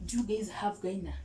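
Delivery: normal talking voice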